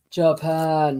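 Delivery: low, loud put-on voice with "Japan" drawn out. Asked by another speaker to say a word: deep voice. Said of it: "say Japan in a deep voice".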